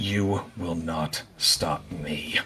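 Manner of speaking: soft, hushed half-whisper, directed close. Narrating a fight, voicing an attacker's line to the player: half-whisper. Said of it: "And she whispers to you".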